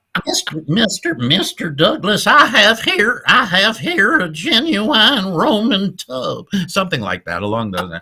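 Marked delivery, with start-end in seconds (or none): 0.3-6.5 very high, raised, slow voice, every word dragged. Trying out a requested imitation for a podcast audience: Pat Buttram impression. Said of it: "can't get my voice to go there".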